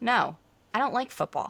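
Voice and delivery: put-on flat, deadpan delivery. Retelling turning down the husband's offer to watch football: imitating own deadpan reply. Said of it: "completely dead-faced".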